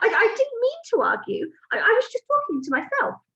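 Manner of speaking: stuttering, shrill witch-like cry. Narrator reading a witch answering the Grand High Witch, crying out, stammering. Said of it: "the witch cried out".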